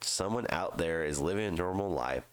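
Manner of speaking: ordinary talk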